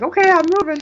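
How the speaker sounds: squeaky, eager voice.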